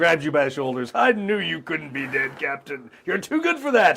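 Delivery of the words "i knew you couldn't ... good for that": obnoxious, booming, loud bluster with climbing pitch. Grabbing the captain by the shoulders, he greets him in a loud obnoxious voice. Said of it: "as obnoxious and loud".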